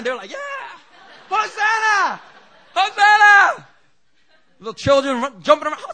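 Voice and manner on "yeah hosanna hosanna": very high, loud cheering crowd shout. Retelling how the crowd greeted Jesus: imitating crowd shouting. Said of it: "They were shouting".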